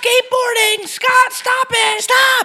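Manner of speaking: shrill, very high screeching scream. Acting out a woman in a video yelling at kids: imitating a woman screaming. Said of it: "she kept, like, screaming at him to stop".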